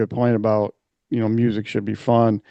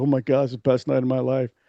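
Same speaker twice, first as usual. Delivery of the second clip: put-on elated, overjoyed kid voice, quieter; 6 dB quieter than usual. Retelling a concert story, imitating a kid brought up from the crowd, just elated. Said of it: "he's like just elated".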